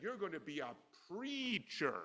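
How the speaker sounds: sarcastic delivery. Retelling a professor's remark to a student in class: imitating a sarcastic remark. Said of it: "he said that sarcastically with, you know, with accent".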